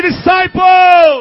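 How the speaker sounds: slow, loud, called-out shouted word. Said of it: "Somebody say".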